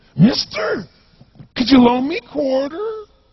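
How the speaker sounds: weird, strange voice. Retelling what a man who popped his head up said, in a bizarre voice. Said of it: "He had this really bizarre-looking sounding voice".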